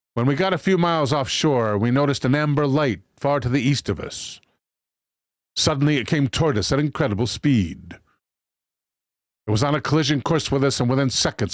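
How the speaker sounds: usual speaking voice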